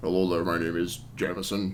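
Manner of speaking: very low, deep character voice. Describing a game's characters, the speaker mimics one in a super low NPC voice. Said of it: "all the N P Cs have like super low voices".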